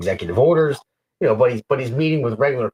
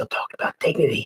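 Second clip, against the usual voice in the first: put-on whispering; 2 semitones higher, 4 dB quieter than usual. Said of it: "where he goes from a whisper".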